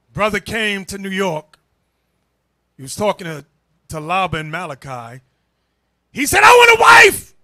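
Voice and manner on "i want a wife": put-on yell, higher and louder. Retelling how a brother acted in New York: imitating someone yelling. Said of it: "Yelling like".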